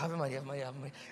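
put-on frantic, desperate pleading, stuck repeating one phrase. Retelling a woman repeating a prayer during heavy turbulence: imitating a desperate woman praying. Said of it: "ela tava tão desesperada".

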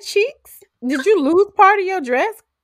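high-pitched, mock-incredulous tone.

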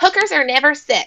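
loud voice pitched very high. Quoting a former agency boss: imitating a high-pitched Minnie Mouse voice. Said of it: "a really high-pitched voice, like Minnie Mouse".

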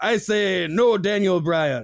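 put-on Japanese accent on a name. Give your answer to the pay-per-view tiebreaker in a japanese accent. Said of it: "Why'd you have to say it with a Japanese accent?".

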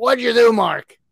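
put-on loud, gruff New York Brooklyn accent. Retelling Larry asking Mark what he did, Larry's gruff Brooklyn accent. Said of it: "he has this Brooklyn gruff, Brooklyn, New York accent".

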